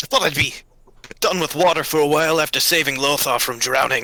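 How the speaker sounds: sputtering and coughing. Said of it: "sputtering, like, paladin elf ... coughing up water".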